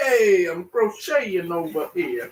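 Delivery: loud, slow, put-on New York accent. While crocheting, the speaker mimics how a New Yorker talks: New York accent. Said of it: "Kind of like a New Yorker".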